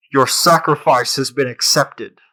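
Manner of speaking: oracle-like, pronouncing voice. As the voice everyone hears after the bell sounds at the well, in a loud booming voice. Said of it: "loud booming voice you hear".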